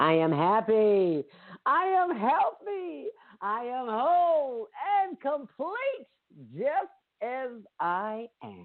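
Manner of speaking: overjoyed, ecstatic, very high exclamation. Leading a morning group affirmation, say it like you just won the lottery. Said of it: "Now say it like you just won that lottery".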